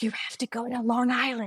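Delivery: secretive stage whisper. Retelling a woman's secretive advice about a baby's tongue tie, imitating a half-whisper. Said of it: "like whispering to me".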